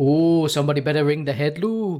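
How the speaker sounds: rough attempt at Welsh accent. Asked by another speaker to do the welsh one now, in a welsh accent. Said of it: "do your Welsh one now".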